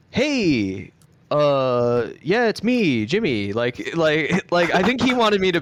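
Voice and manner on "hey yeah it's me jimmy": very slow, casual speech with long drawn-out uh. Retelling a chat with MrBeast: imitating how MrBeast talks. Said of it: "the way that he talks is he's sorta like".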